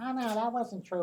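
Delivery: really high-pitched voice. Recalling a man who kept interrupting an interview, imitating a high-pitched voice. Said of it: "He had this real high pitched voice".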